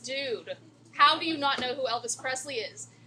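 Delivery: ordinary talk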